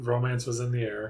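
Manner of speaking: plain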